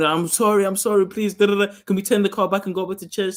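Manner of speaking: put-on crying, tearful pleading. Retelling begging dad in the car to turn back: imitating own crying plea. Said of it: "So I start crying".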